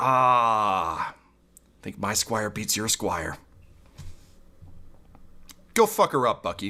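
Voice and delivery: weary, sighed-out delivery. Voicing a character who sighs and sends his squire in: sighing character line. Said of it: "Xanthus just kinda sighs and says".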